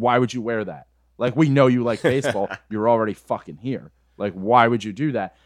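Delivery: re-enacted shouting. Speaker retells yelling at a guy wearing an Orioles jersey, retelling own yelling. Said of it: "I just started yelling at him like".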